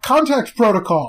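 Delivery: sudden, loud, high announcing shout. Voicing a creature waving its raised arms in quarter circles: shouting a line. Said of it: "And it just shouts".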